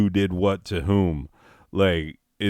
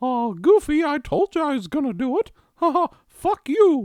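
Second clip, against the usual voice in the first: high cartoon voice with pitch swings. Acting a skit as Mickey with lobster claws: Mickey Mouse voice.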